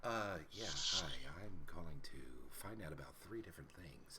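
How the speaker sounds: very quiet, barely audible, near-inaudible mumble. Imitating Phil calling on the phone: imitating Phil speaking inaudibly quietly. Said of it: "no one can hear what the hell you're saying".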